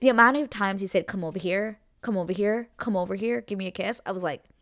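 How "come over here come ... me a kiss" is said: put-on, contrived, fake-flirty come-on tone. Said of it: "the way he says it, it gives me the ick".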